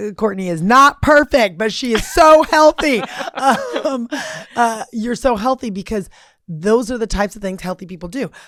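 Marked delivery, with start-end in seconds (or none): 0.1-3.0 booming slow proclamation. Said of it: "I proclaim from the mountaintops".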